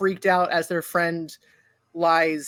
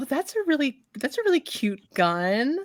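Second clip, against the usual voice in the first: coy, charming, flirty tone, high and swooping; 7 semitones higher than usual. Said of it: "kinda smile and flutter her eyes at you".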